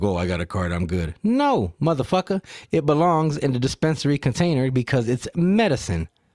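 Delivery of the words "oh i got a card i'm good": put-on careless casual voice. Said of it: "be like".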